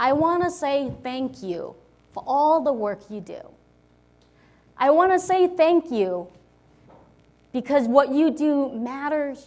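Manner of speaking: moved, emotional voice, choking up. Speaker, asked for final words, thanking people for their work, getting emotional. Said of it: "now I'm actually getting emotional".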